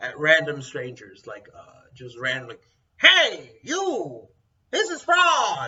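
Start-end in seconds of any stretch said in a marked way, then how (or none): 3.0-5.7 very drawn-out, slow, swooping, squawking parrot screech. Acting out a parrot yelling at random strangers, imitating a parrot screaming. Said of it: "so just screams".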